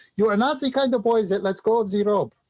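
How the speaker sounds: put-on Quebecois accent. Retelling what a woman said to the speaker while water skiing, in a heavy Quebecois French accent. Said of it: "heavy French uh, Canadian accent, Quebecois accent".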